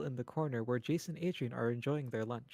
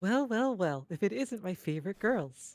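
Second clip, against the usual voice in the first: cute, sweet, pitched-up waitress voice; 5 semitones higher, 3 dB louder than usual. Narrator voicing a familiar waitress greeting the group, sweet June voice. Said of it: "That's a sweet one".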